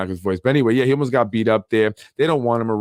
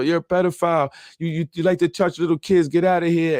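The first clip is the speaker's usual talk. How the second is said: put-on Yonkers accent, pitched higher; 7 semitones higher than usual. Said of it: "Ru Rose Yonkers voice".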